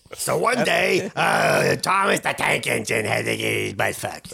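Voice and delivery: rough, creaky voice. Telling a Thomas the Tank Engine line as George Carlin impression. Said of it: "That's my Carlin impression".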